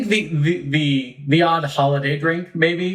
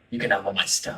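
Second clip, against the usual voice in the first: hushed, low, soft, quiet voice. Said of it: "and he's like".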